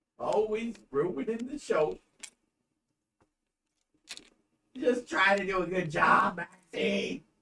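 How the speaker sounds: soft, low, tearful speech. Addressing another person on a show, crying while talking. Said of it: "Why you gotta cry?".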